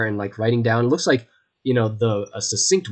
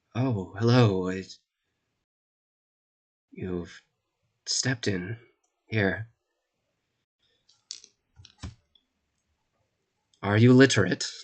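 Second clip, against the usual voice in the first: dejected, joyless, glum, despondent tone; 2 semitones lower, 4 dB quieter than usual. Narrating a scene, voicing a man who looks up from writing: despondent greeting. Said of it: "it gives this just despondent greeting".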